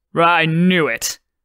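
sudden, bursting exclaimed outburst. A husband reacts to hearing the colors aren't ministry approved, exclaiming. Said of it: "the husband exclaimed".

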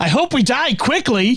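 very high, relentlessly chipper, cheery, upbeat voice. Retelling Data's reply to a request for positivity, mimicking Data's very positive voice. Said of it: "a very positive voice says".

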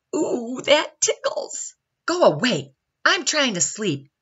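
high, whiny, complaining sing-song voice. Reading a picture book aloud, voicing Baby Baobab answering Caterpillar, in a whiny voice. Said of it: "whined Baby Baobab".

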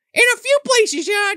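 very high, loud squeaky voice.

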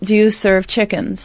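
ordinary talk, nothing marked

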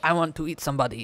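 fake, put-on Russian accent. Quoting a Craigslist post by people in Russia, in a put-on Russian accent. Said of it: "what did you think of that accent?".

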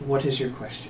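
very quiet, composed, calm and controlled. As people look up in wonder, the queen asks her question, very calm and controlled. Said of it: "the queen very calmly, very controlled".

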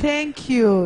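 velvety, smooth, silky delivery. Speaker retells what a man said to him after laughing, in a smooth voice. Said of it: "in a smooth voice".

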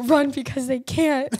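loud shout. Recounting how a man made the speaker run, retelling his yell. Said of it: "he's yelling out at me".

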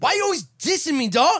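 very high, loud, heated, angry voice. Imitating how he used to talk when mad in high school: imitating own past angry talk. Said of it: "I used to talk like that in high school when I got mad".

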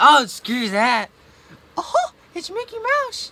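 high, loud squeaking voice. Friends urge someone to do the voice; they finally try a Mickey Mouse voice. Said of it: "Did you hear Mickey?".

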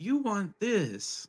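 high-pitched spectral ghost voice. Voicing a ghost who offers a flame to a player: voicing a ghost. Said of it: "as she holds it up".

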